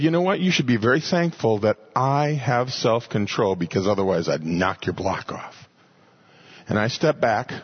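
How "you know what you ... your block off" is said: plain, very matter-of-fact delivery. Recalling his bad behavior, speaker quotes his father, imitating a matter-of-fact voice. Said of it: "In a very matter-of-fact voice said".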